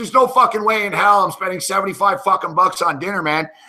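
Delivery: put-on angry ranting. Retelling refusing to pay for a steakhouse dinner: retelling an angry fit. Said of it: "went into an instant, like, fucking fit".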